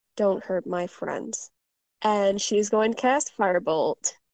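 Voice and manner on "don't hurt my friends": low mutter, lower and quieter. Voicing a badly hurt character facing a big foe: muttering. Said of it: "And she mutters".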